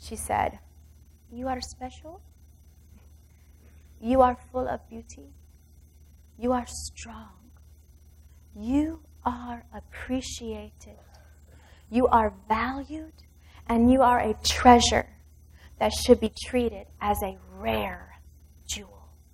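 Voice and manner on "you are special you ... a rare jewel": mock whisper, quieter. Retelling what a masseuse said in her ear: imitating a whisper. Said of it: "she whispered these words in my ears".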